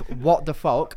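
ordinary talk

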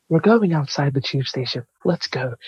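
put-on American accent, her way of talking. Retelling what an American woman said, putting on her American accent. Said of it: "so I'm going to do her accent".

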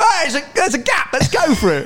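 high-pitched, excited, eager voice. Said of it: "Tony's like".

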